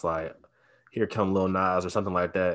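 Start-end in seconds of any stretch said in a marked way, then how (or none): none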